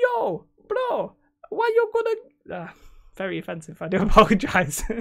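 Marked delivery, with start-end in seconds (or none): 0.0-2.6 drawn-out, slow, very high gangster voice. Imagining a game company pitching Marvel for a license, in a high-pitched gangster voice. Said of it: "It's like a really high pitched gangster".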